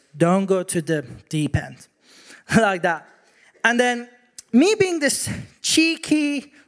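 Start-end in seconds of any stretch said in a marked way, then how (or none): 0.2-1.9 blunt, direct, no-nonsense fatherly tone. Retelling his dad's warning at the swimming pool, imitating dad's direct warning. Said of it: "my dad is a middle eastern dad so he's very direct he said it like this".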